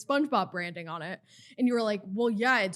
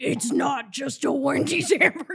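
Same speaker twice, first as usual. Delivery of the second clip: possessed demon voice bursting out, high and loud; 5 semitones higher, 5 dB louder than usual. Retelling suddenly snapping during a normal talk: imitating own past demonic yell. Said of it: "Suddenly the voice comes out".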